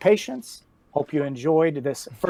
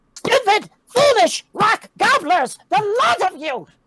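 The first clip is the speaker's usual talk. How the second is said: put-on very high, agitated, perturbed old woman's cackle; 6 dB louder than usual. As game master, voicing someone cackling at the party across the forest: old, perturbed, cackling voice. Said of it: "an old, perturbed voice cackles out".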